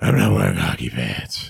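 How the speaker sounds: very low, creaky, rough masked-vigilante voice. Joking about the Batman movies, quoting the hero: Batman voice. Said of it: "every time you guys make that voice".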